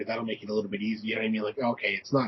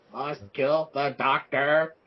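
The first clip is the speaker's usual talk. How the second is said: flat, level monotone, every word on one note; 4 semitones higher, 4 dB louder than usual. Joking about giving a creature a voice box: Dalek voice. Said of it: "give him a Dalek voice".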